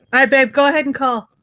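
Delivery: loud shout. Telling someone to go ahead and call: yelling. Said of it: "I just yelled that in the mic".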